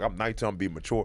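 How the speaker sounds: usual speaking voice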